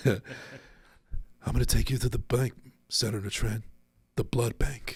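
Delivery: breathy movie-star voice. After mentioning Seagal's voice, the speaker performs a quoted line as a breathy Seagal impression. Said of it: "He's got that breathy voice".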